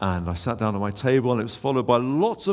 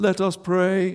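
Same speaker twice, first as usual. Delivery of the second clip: churchy, intoning vicar tone; 7 semitones higher than usual. As the speaker is about to say grace, someone else cuts in: high Anglican voice. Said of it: "in that sort of high Anglican voice".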